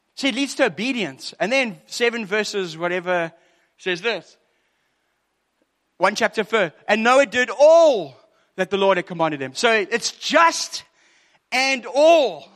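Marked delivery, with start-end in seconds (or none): 6.9-12.3 loud, excited, worked-up preacher-style shouting. Quoting a verse about Noah doing all he was commanded: shouting. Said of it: "why am I shouting?".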